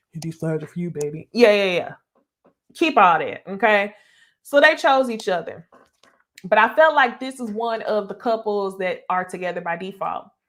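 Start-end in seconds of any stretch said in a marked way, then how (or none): 0.1-1.3 deep, low, sweet-talking ladies'-man voice.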